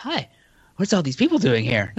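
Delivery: high, swooping voice of a tiny dachshund. Voicing a racing wiener dog that turns around: voicing a wiener dog. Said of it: "to turn around and go".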